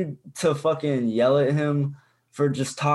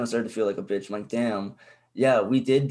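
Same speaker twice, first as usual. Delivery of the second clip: ordinary delivery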